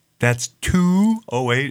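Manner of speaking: put-on Minnesota accent with round vowels. Imitating how a woman says phone numbers; round minnesota accent. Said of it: "It's very round and ridiculous in every way".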